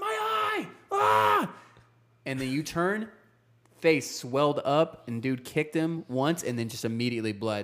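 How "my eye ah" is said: very high, swooping, pained screeching scream. Retelling a video of a man hit in the eye: imitating a screeching scream. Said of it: "screeching scream".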